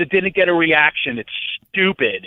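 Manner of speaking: mock furious shouting. Retelling what his tag partner yelled at him after a match, retelling an angry yell. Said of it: "he's yelling at me as my partner".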